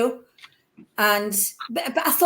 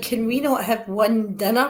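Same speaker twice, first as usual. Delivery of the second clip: plain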